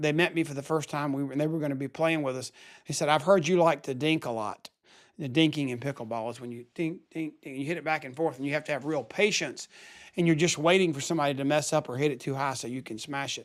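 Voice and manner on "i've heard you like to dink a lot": put-on sarcastic tone. Retelling what a new pickleball partner said on first meeting: imitating a sarcastic remark. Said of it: "they were being very sarcastic".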